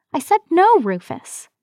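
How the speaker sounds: high, shrieking, screeching protest tone. Narrating a story, Montana, cornered by Rufus in a barn, refuses him: screeching. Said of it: "she screeched".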